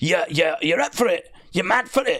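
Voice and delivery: put-on thick, laid-on Scottish accent. Retelling what Edward said at a concert, in Edward's thick Scottish accent. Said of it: "kind of thick Scottish accent".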